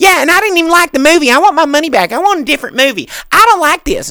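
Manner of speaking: very high, screechy, shrieking rant. Retelling a customer's complaint at a rental counter: screechy pterodactyl voice imitation. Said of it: "Just comes into pterodactyl voice".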